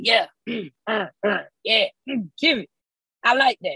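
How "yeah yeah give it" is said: very slow, one-word caveman grunts. Describing their own habit, the speaker demonstrates grunting one-word phrases. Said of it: "there's a lot of grunting".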